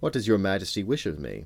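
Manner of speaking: ordinary delivery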